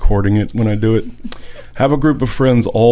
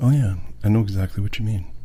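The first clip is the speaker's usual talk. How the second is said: patronizing, condescending, gentle soothing tone; 3 semitones lower, 7 dB quieter than usual. Mocking the soothing voice adults hate, in a mock-soothing condescending voice. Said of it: "A soothing voice and a slow condescend- condescending head nod. Just like".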